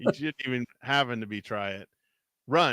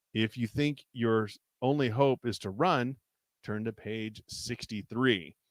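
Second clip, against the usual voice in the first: plain reading voice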